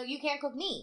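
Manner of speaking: normal talking voice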